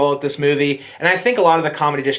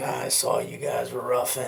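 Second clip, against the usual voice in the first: very quiet, soft, put-on deep voice; 3 semitones lower, 10 dB quieter than usual. Retelling his reply in a later conversation, imitating his deep voice. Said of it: "in his deep voice".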